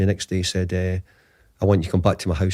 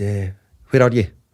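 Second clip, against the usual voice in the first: put-on Scottish accent; 4 dB louder than usual. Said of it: "that's a poor Sir Alex accent probably".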